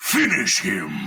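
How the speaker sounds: arcade fighting game announcer voice. Asked by hosts to voice iconic video game lines: fighting game announcer voice. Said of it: "the next one is finish him".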